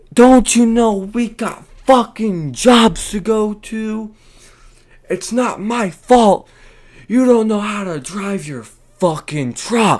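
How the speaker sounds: very high, very loud hobgoblin screech. Retelling a woman yelling out her truck window, imitating someone yelling. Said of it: "yelling out to the world like a ratchet freaking hobgoblin".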